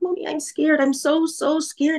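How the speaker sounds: mock frightened, high, trembling little kid voice. Retelling a young son's words after he came home shaking: imitating a scared, shaking child. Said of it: "and he was shaking".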